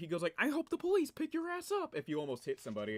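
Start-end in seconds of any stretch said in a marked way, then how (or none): 0.4-1.9 very high, animated suburban guy voice with swooping pitch.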